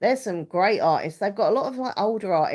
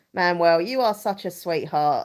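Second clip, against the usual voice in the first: plain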